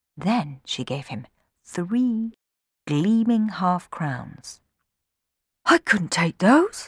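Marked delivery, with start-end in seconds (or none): 5.7-6.9 words gasped out. Narrating a boy's reply on being handed three half crowns; gasped. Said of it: "gasped Sammy".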